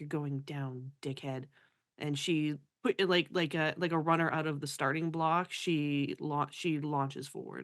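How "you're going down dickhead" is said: hushed, grumbled mutter under the breath. Narrating a character who turns away and speaks, muttered under her breath. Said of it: "she just mutters under her breath".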